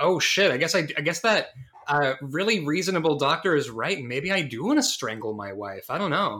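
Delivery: ordinary talk, nothing marked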